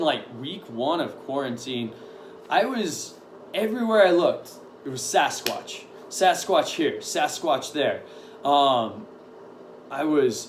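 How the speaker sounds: plain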